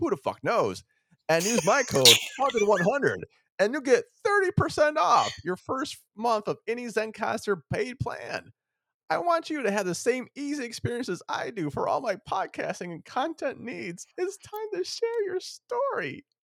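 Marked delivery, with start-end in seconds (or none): 1.3-16.2 very high pitch, creeping steadily upward, ad-read style. Podcast host reading a sponsor ad, voice rising higher and higher. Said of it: "Your voice is getting higher and higher".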